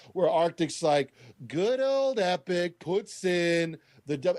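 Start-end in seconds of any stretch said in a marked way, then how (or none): 1.5-4.4 put-on sarcastic voice, pitched higher. Retelling a commentator's video about Epic: imitating Arctic's sarcasm. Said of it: "laden and dripping with sarcasm".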